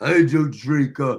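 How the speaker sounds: haughty, snooty tone, low and slow. Recounting a woman's remark to listeners, mock-snooty, nose in the air. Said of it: "she had her nose in the air when she said".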